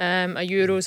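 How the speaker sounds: ordinary talk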